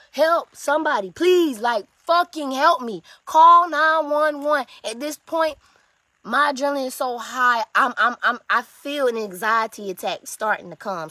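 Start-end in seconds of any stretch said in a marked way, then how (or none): 0.1-4.6 acted-out yell, much louder. Retelling trying to run out the back door without shoes: retelling a yell for help. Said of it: "So I start yelling".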